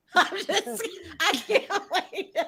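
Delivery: very slow words spoken through laughter. Reacting to a shocking story, laughing while talking. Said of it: "Why are you laughing?".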